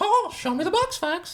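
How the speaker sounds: very high, slow, squeaky voice. Recalling an old impression they used to do, in a Mickey Mouse voice. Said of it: "I used to have a long like Mickey Mouse impression".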